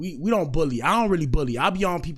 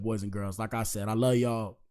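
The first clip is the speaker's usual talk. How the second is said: normal talking voice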